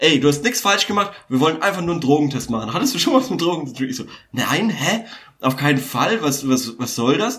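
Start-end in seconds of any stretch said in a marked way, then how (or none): none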